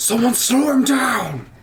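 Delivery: high, loud, slow, furious angry scream. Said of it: "Grim is gonna scream something".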